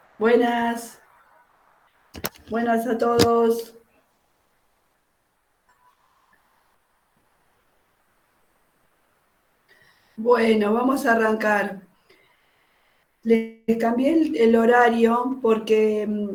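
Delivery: worn-out, struggling voice in bad shape. A teacher greeting the class at the start of a lesson, with an ailing voice. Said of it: "estoy muy mal de la voz".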